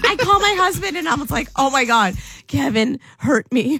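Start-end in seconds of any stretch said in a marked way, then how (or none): 1.6-3.8 teary cry broken by laughter. Speaker retelling phoning her husband after being hurt, acting out crying while laughing. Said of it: "But laughing at the same time".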